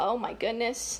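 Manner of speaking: plain reading voice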